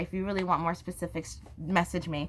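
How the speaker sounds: usual speaking voice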